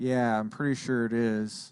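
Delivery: heavy, slow sarcasm. Reacting to a headline just read aloud: sarcastic. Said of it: "I'm being sarcastic".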